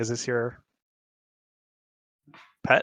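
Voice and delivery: theatrical whisper. A player character asks Zokar a question, half-whispering. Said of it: "I will whisper to Zokar".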